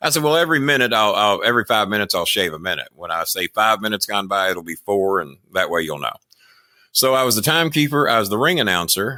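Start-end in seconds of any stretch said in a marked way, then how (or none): none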